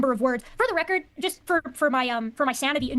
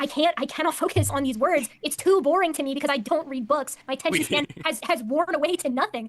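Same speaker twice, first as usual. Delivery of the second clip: usual speaking voice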